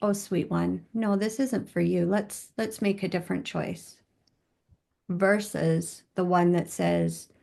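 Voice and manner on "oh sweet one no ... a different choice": usual speaking voice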